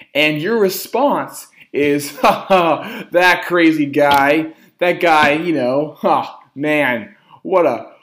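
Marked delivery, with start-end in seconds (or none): 2.2-7.9 loud, laughing, mocking brush-off. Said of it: "He just smiles and starts laughing and goes".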